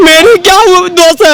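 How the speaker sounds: slow, tearful crying voice with tears breaking through.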